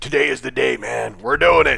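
rough, creaky put-on voice. Retelling what you told Cam moments after walking out of BioWare, in a Randy Macho Man voice. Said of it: "In the Randy Macho Man voice".

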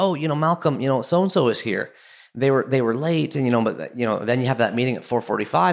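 normal talking voice

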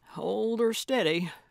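grumbling, half-audible mumble. Crossing a deep drop-off on a mountain, a woman speaks to her companion, muttering. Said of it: "she muttered".

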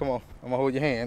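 ordinary delivery

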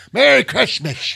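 put-on Yiddish lilt, high, creaky, raspy twang. Joking about the word Kishmish with friends, doing a Mensch on a Bench voice. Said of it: "That sounds like the mensch on the bench".

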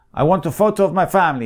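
put-on Polish accent. Retelling what a customer at the photo studio said: Polish accent. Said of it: "That's my best Polish accent".

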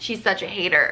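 ordinary talk, nothing marked

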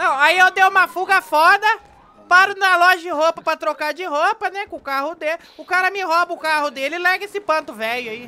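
put-on piercing, high, shrill whistle-like voice. A fugitive character in a role-play recounts an escape: shrill whistle-like voice. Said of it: "A polícia tá toda atrás de mim, hein? Eu sou um fugitivo. ... Ainda mais essa voz de apito".

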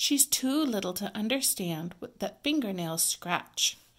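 ordinary delivery

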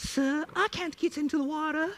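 put-on high, whiny small-boy voice. Retelling a story character's plea, in a whiny Tiny Tim voice. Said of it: "I think this was like a Tiny Tim kind of voice here".

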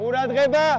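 high, loud, coach-style shouting.

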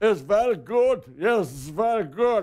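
loud, put-on Russian accent. Speaker announces a Russian accent and does it, put-on Russian accent. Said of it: "let me do a Russian accent".

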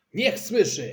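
loud, high hollered shout. Dad answers Mom, who asked him to be quieter, shouting. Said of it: "krzyknął tata".

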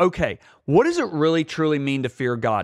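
usual speaking voice

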